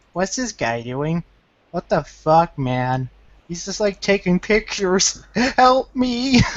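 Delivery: put-on flustered American voice, high, freaked-out panic. Imitating a freaked-out shopper in a store: imitating a freaked-out American. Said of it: "freak the shit out of the Americans".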